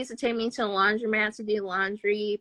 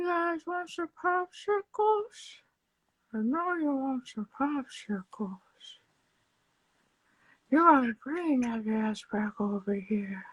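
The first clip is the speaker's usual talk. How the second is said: creepy, leering, put-on pervert voice. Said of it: "could you do the Herbert, the pervert voice".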